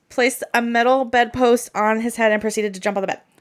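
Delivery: rattled-off, very fast, rushed delivery. Recounting a disturbing detail right after a trigger warning, said really fast. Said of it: "I'll say it really fast".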